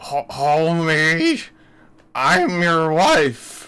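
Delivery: froggy, slow, drawn-out sing-song with big pitch swoops. Describing how someone imitates characters from shows, in a Marge Simpson voice. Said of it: "you know how Marge Simpson is like".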